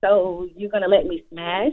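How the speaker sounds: mechanical little robot voice, flat and slow. Retelling what a guy from school asked her: imitating a robotic voice. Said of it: "He sounded like a little robot".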